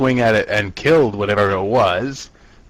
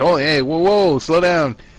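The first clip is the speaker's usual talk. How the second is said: mock hollering, high, alarmed shout; 6 semitones higher than usual. Retelling how everyone called after a character running ahead: imitating a shout. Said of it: "everyone shouted down the corridor to him".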